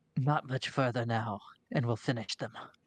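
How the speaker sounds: distant, understated voice as if far away. Narrating a game, voicing someone heard up the tunnel behind a player: quiet voice. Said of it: "it is pretty quiet".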